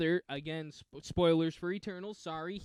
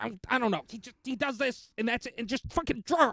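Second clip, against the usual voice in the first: put-on frantic, wired voice, pitched higher; 6 semitones higher, 3 dB louder than usual. Imitating an eighties comic creator under deadline: coked-up Stan Lee impression. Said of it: "your coked up Stan Lee impression".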